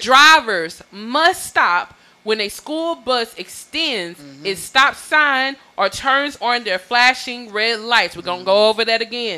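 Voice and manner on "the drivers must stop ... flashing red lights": deliberate, slow, clear, carefully spelled-out reading. Reading a Texas state law aloud to listeners, slow and clear. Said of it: "I'm going to read this slow and clearly".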